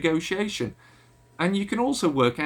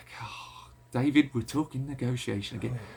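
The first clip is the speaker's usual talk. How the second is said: bored, unengaged, uncommitted tone in a low voice; 5 semitones lower, 5 dB quieter than usual. Showing how tone alone can make a speaker sound bored and unengaged. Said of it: "I don't sound engaged. I don't sound committed. I sound bored".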